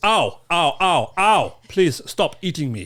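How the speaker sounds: put-on loud, drawn-out Russian accent. Imitating a shark attack victim on request: imitating a Russian shark victim. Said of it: "You do a good accent. Could you imitate him".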